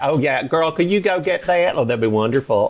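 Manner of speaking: put-on Atlanta accent. Teasing the guy from Atlanta assisting him at Dragon Con, put-on Atlanta accent. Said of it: "the guy assisting me was was from Atlanta".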